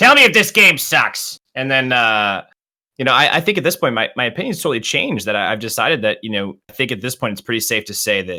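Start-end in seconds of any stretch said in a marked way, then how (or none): 0.0-1.4 put-on Brooklyn accent, higher and louder. Imitating players asking about the game: put-on brooklyn accent. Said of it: "All from Brooklyn".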